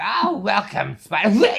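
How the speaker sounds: terrible shrill, very loud, high, swooping voice. Acting out a villain greeting the hero: terrible Joker voice. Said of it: "that was a terrible Joker".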